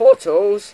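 high loud voice going funny. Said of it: "Sorry about my voice there".

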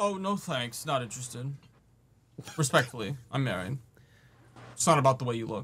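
sassy attitude, brushing it off. Acting out turning down a stranger's approach: sassy. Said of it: "Sassy ass".

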